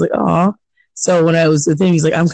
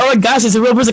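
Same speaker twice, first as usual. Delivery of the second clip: mock frightened voice, higher pitch; 6 semitones higher than usual. Imitating callers who hear a real voice and get scared: imitating a scared caller. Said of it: "they do get scared".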